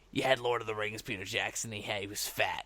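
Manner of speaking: low, quiet, mocking put-on voice.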